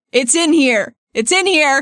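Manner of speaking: shouting. A player's character throws books into a crowd, shouting. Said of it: "she shouts".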